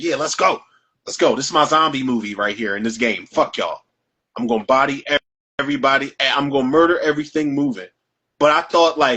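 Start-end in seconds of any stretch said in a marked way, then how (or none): none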